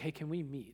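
anxious, nervous, uneasy voice. Retelling a friend's nervous phone call: imitating a nervous voice. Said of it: "had this real nervousness in his voice".

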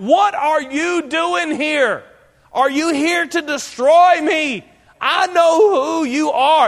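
mock loud shrieking cry. Retelling a cry from the congregation during preaching, retelling a loud shriek. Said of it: "this shriek goes on in the congregation. This loud cry".

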